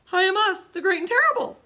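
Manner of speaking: quavering, trembling cry, very high and loud. Reading the little man answering the Tin Woodman, trembling voice as Oz. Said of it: "said the little man in a trembling voice".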